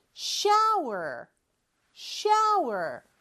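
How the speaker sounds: high sing-song, pitch rising and falling. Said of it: "높낮이가 있죠".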